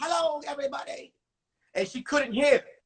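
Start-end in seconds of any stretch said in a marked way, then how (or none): 0.0-1.1 put-on old lady voice. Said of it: "She talked like this".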